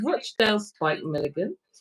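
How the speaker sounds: ordinary talk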